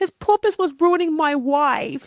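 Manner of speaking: lisping, high, babyish put-on baby voice. Riffing on Little Nicky's purpose on Earth, in a baby voice. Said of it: "I just realized baby voice".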